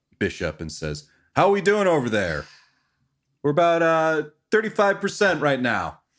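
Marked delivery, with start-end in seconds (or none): 1.4-5.9 high, loud yell carrying across the room. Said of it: "Red yells over to".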